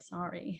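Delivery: soft, sincere tone.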